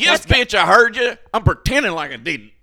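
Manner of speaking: very loud, high, put-on rural Southern US accent. Re-reading a caption at another person's request, in a redneck accent. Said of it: "read it like in a redneck accent".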